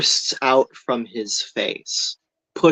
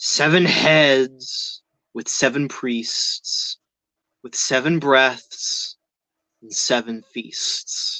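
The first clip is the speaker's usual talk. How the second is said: eerie, otherworldly, unearthly alien voice. Narrator voices a jagged shadow figure speaking to the group, alien tone. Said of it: "in this alien tone".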